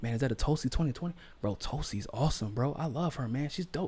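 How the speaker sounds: hushed, furtive, secretive whisper. Retelling how supporters approach on the street: imitating people whispering.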